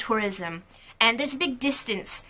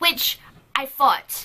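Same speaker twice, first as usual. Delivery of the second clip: ordinary delivery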